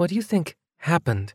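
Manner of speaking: speaking in a hush. Walking a deserted street, one character asks another, in a hushed voice. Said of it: "asked Nevaeh in a hushed voice".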